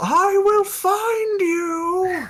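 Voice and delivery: very high, very slow, loud drawn-out yell. After the doppelganger vanishes into shadow, the character shouts after it. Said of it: "Ovlon just shouts".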